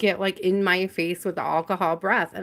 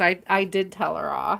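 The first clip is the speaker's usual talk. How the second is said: usual speaking voice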